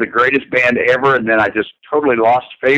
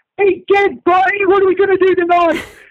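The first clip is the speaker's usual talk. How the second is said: flamboyant, showy cartoon voice, pitched very high. Describing a favorite cartoon character to the interviewer: flamboyant Pinky voice. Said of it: "he would be very flamboyant in his speech".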